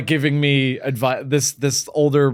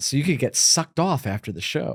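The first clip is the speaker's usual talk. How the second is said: imitated whisper, quieter; 4 dB quieter than usual. Retelling what an old lady whispered after the show: imitating a whisper. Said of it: "She whispers in my ear".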